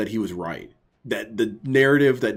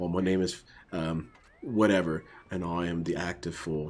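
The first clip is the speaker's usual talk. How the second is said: soft, low, gentle aristocratic posh English accent; 4 semitones lower, 9 dB quieter than usual. Voicing the imagined new stream persona just described, in a soft aristocratic English accent. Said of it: "a soft English accent, you know, very aristocrat sounding".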